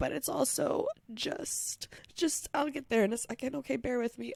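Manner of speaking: crying through the words, tearful, voice breaking. Opening a podcast episode to listeners, crying. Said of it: "I'm crying for a lot of positive things".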